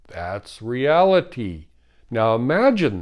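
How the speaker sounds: plain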